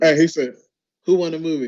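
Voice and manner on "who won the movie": two voices mixed into one blended voice. Quoting a line someone said, imitating Bill Simmons. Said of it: "it's definitely Bill, but it's also, like, kinda half Josh Pruitt".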